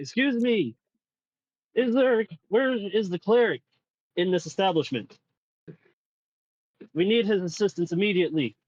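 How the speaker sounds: very loud, high-pitched calling. As a character at the door, asking for the cleric, speaking a little loudly. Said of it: "I'm gonna speak a little loudly and be like".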